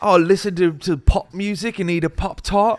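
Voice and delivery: put-on British accent. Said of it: "talking in a British accent".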